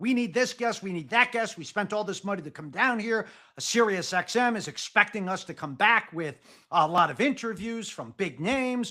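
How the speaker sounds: ordinary delivery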